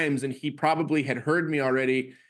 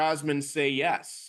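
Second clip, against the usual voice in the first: plain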